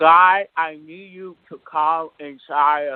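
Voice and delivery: speaking with mouth held open. Trying the exercise a partner described, speaking with mouth held open. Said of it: "I'll imitate it".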